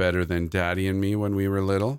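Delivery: ordinary delivery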